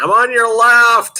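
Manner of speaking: play-acted, loud, very high yell from far away. Speaker retells passing a walking couple from thirty feet out: retelling a yell. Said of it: "and I'm yelling".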